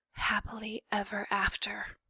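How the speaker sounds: soft, hushed whisper under the breath. Reading a story aloud, Despereaux's line, whispering. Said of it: "whispered Despereaux".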